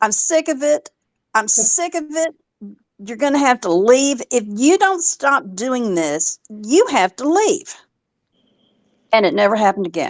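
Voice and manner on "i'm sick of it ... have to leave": mock, mild, half-shouted yell. Retelling the night the closet light came back on, the speaker reenacts screaming at him. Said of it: "yelling at him, screaming".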